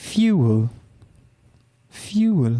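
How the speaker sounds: clumsily faked, bad put-on British accent. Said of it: "Do the British accent again?".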